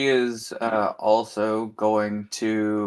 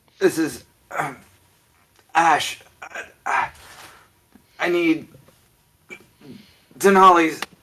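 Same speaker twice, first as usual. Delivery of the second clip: badly hurt, in pain, much higher; 6 semitones higher, 3 dB louder than usual. A badly beaten man hails over the screen before collapsing; badly hurt. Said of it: "he's all beaten up and very badly hurt".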